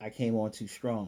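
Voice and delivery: ordinary talk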